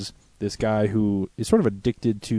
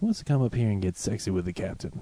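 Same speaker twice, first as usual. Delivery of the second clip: put-on creepy boat captain voice, quieter; 5 dB quieter than usual. Retelling a cartoon scene, imitating a creepy boat captain. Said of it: "then he gets creepy".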